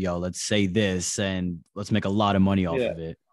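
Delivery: ordinary delivery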